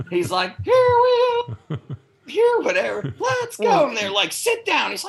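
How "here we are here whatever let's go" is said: cursing in a high, dog-like put-on voice. Retelling a movie scene where he curses at someone, mock cursing in dog voice. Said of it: "cursing at him with dog bitch voice".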